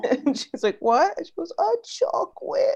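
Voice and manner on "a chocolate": put-on defeated girl voice, much higher. Retelling a little girl answering her mom, imitating a defeated little girl. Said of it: "she sounds like so defeated".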